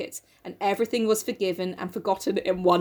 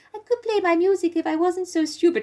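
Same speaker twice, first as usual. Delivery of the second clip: high, put-on mocking voice.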